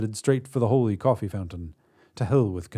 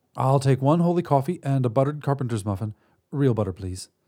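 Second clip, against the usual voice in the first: ordinary delivery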